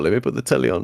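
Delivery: mock calm and casual, high, no anger. Imitating a friend coolly taking the mattress out: imitating someone with no anger. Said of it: "you had no anger on you".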